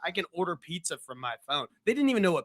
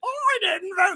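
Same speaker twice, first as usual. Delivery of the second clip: very high, squeaky, shrill, loud comedy voice; 5 dB louder than usual. Quoting a favorite film line to a friend: Eric Idle impression. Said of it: "That's the only impression I can do".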